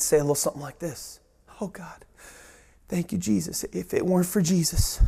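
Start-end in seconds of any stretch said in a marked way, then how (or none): 1.6-5.0 weepy voice, speaking through tears. Acting out John in prison thanking Jesus: in tears. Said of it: "I bet you he'd be in tears".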